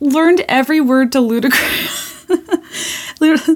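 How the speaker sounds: real laughter in speech. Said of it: "I sound like that annoying guy on TikTok who fake laughs".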